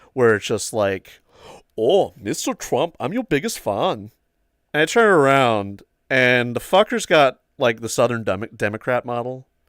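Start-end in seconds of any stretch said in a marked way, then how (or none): 1.8-4.1 heavy, thick put-on German accent. Retelling a voice heard from behind, thick German accent. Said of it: "this very thick German accent behind me".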